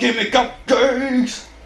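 mock, high yelling. Standing around in a game trying to find the way, shouting in the dark. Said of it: "I'm shouting in the dark".

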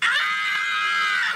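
low-pitched, loud mock scream.

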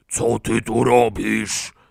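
rasping, rough roar, slow and dragged out. Reading a children's story aloud, voicing a babysitter who roared. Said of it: "Ryknęła radioaktywna Rachela".

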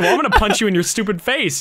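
ordinary delivery

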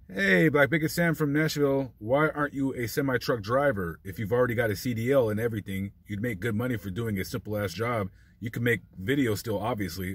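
plain

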